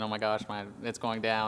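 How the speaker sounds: ordinary delivery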